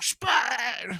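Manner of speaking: acted out, very high, all-out top-of-lungs screaming. Retelling how a man screamed at him, retelling a top-of-lungs scream. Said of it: "literally screaming so loud at the top of his lungs".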